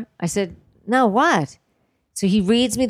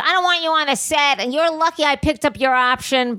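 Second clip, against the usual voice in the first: play-acted high screaming rant at full tilt; 8 semitones higher than usual. Retelling how she screamed at the speaker on set: imitating someone screaming. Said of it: "she's screaming obscenities at me".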